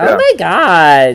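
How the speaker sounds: imitated nasal-voiced girl voice. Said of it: "That nasally".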